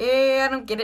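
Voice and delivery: put-on sarcastic character voice. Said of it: "And then Ham's like".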